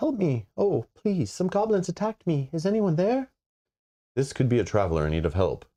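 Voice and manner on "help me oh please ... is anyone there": very high, piping, pleading cry. Narrating a scene, voicing someone hidden in the underbrush: high piping voice. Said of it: "a piping voice rises".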